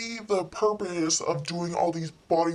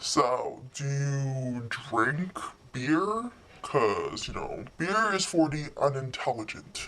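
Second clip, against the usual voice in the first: put-on patronizing, superior, know-it-all tone; 3 semitones lower than usual. Retelling what an awkward date said about beer: imitating a date's condescending voice. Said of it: "he said this in this exact voice".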